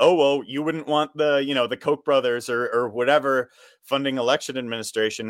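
ordinary talk, nothing marked

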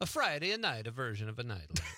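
put-on Italian accent. Redoing the show's opening line in an italian accent. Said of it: "I almost morphed into an Italian accent there".

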